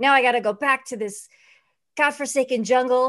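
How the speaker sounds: loud, griping, complaining tone. Retelling a trailer where Danny DeVito complains while packing. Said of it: "bitching about having to go back".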